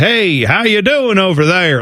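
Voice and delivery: put-on cowboy-style Western accent attempt. Describing a movie, the speaker mimics Robert De Niro: Robert De Niro's Western accent. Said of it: "Like he's trying to do that kind of accent".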